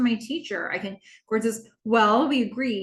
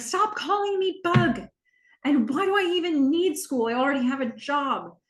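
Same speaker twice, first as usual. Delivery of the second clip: high, raised-voice outburst, pushing back defiantly; 5 semitones higher than usual. Retelling a daughter's reply to her dad: imitating a raised voice. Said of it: "Haley raises her voice".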